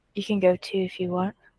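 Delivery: flat, toneless delivery drained of all feeling. Voicing a character who looks at a hovering man: flat, no emotion. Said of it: "says with no emotion in her voice".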